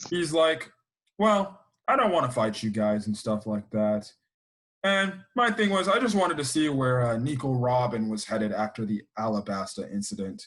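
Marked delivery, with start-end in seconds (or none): 1.2-3.1 put-on lazy voice. Retelling what Aokiji says when he wakes up: imitating Aokiji's lazy voice. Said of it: "in the most laziest voice ever".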